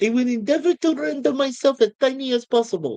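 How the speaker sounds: put-on Indian-accented voice. Retelling a scene, a speaker quotes a character's reply in an Indian accent. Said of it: "In an Indian accent".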